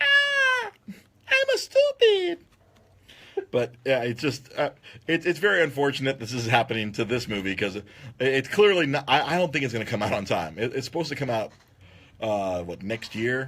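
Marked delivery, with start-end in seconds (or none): 0.0-2.4 pinched-up, very high voice, drawn out slowly. Showing how easy the voice is to do: pinched-up Jar Jar Binks voice. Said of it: "You just freaking just, like, pinch up".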